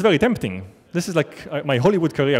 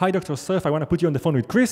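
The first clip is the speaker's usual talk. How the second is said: ordinary delivery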